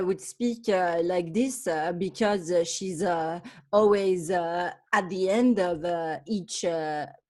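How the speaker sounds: English with a French accent. Showing how a French person speaks English, in French accent English. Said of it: "like if a French person speaks English".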